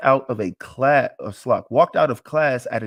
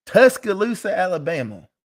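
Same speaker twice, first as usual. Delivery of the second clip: high, put-on rural American country accent; 5 semitones higher than usual. Speaker names the city, country accent. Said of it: "I had to say it with a country accent".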